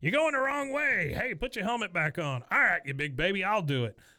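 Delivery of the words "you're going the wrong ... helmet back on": high, hollered yell, shouting. Retelling someone yelling at a guy who ran off toward the soccer team, reenacted yell. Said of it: "Sowers yells at him".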